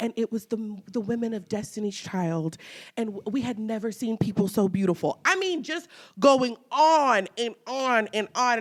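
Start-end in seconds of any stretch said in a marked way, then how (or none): 0.0-5.2 put-on British accent, quieter. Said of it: "that's how he's talking about".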